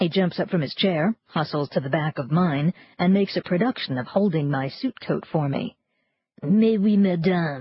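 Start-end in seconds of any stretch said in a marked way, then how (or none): 6.4-7.6 tortured, mangled, fake French accent. Reading a character holding out a coat: tortured French accent like Pepe Le Pew. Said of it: "His French accent is tortured, reminiscent of Pepe Le Pew".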